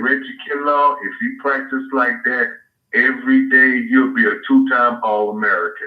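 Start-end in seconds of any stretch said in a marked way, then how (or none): none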